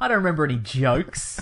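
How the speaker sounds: jokes spat out with disgust. Answering a remark about the film's outrageous jokes: spitting out the word jokes. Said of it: "You really spat that out when you said jokes".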